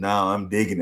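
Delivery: sultry, sweet, cool, sexy voice. Retelling a phone call where she answered: imitating a sweet, sexy voice. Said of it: "in the sweetest, coolest, sexiest voice".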